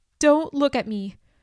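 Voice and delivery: tense, wound-tight, hysterical voice. A woman backing away from a man calling her name, tense and hysterical. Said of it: "Her voice was tense and hysterical".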